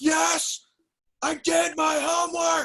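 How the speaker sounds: put-on very high, very slow, creaky, rough yell. Speaker acting out lying to their mom as a child: retelling yelling at mom. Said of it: "I always would just yell in her face".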